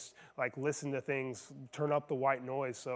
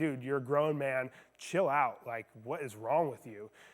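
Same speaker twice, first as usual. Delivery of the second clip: put-on unfriendly, curt tone. Retelling what a passenger in army fatigues said: imitating an unfriendly tone. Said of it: "he wasn't, like, doing it in a friendly way".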